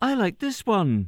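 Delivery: put-on tiny, very high small creature or child voice. Narrator reads the small creature's words to its daddy, in a high voice. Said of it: "said the small creature in a high voice".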